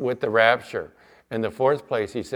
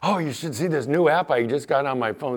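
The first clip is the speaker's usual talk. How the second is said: put-on excited man's voice, higher pitch; 3 semitones higher than usual. Retelling what a man in church said afterwards, imitating an excited man. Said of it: "He was all excited".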